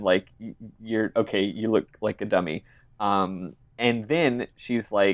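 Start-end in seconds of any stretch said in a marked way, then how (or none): none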